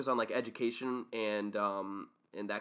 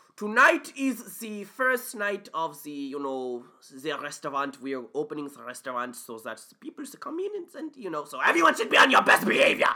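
put-on loud, swooping German accent; 4 semitones higher, 5 dB louder than usual. Retelling an opening line from a school show: German accent. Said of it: "So I was able to do a German accent".

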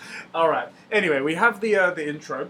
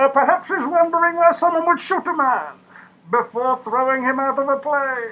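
loud, high, booming put-on character voice; 9 semitones higher, 6 dB louder than usual. Retelling a film scene, the speaker quotes the villain in a Bane impression. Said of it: "that's a really good impression".

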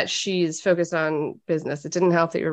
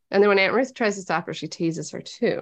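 plain

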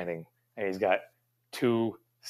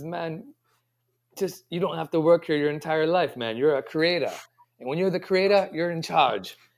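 terrible put-on Jamaican accent, higher pitch; 7 semitones higher, 4 dB louder than usual. Retelling what his best friend Carl said to him: imitating Carl's Jamaican accent, terribly. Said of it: "he said to me in his Padua accent".

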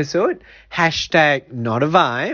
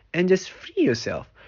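plain

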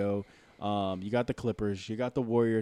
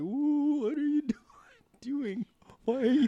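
put-on very high, slow elderly woman's voice. Joking about helping someone cross the street: old lady voice. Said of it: "Was that an old lady?".

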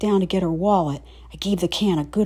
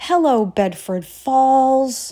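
joyful, loud, high shout, "falls" stretched long; 7 semitones higher, 6 dB louder than usual. Reading a story where someone greets the town on a snowy day: happy shout. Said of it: "snowy and happy and shouted".

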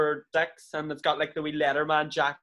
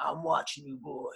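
put-on, drawling Old West cowboy voice; 7 dB quieter than usual. Imagining a close-up where the character talks: put-on cowboy voice. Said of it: "it's like a cowboy".

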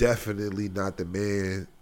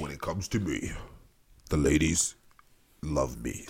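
low, put-on storyteller narrator voice; 4 semitones lower than usual. Joking about himself, the speaker says the line in a narrator voice. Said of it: "say it it has a narrator voice".

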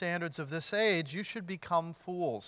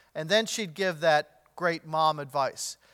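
ordinary talk, nothing marked

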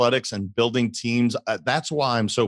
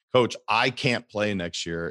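ordinary talk, nothing marked

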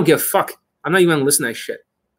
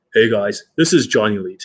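resonant announcer voice, deeper, louder, lower; 3 semitones lower than usual. Showing how breathing changes the voice: deeper, louder news reporter voice. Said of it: "Now I sound like a, you know, news reporter".

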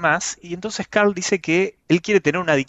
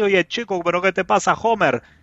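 put-on Caribbean Spanish accent; 3 semitones higher than usual. Describing the Spain dub of a cartoon, imitating Carl's Caribbean dub accent. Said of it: "una voz caribeña de, de negro y habla todo así".

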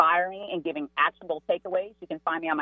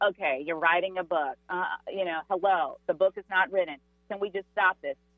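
usual speaking voice

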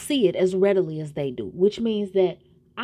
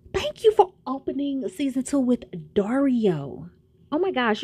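thrilled, gushing, excited, high voice; 5 semitones higher than usual. Thanking the producers of Oscuro Deseo, the speaker sounds excited. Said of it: "you guys can hear the excitement in my voice".

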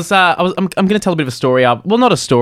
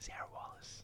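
unvoiced whisper. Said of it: "Why are you whispering?".

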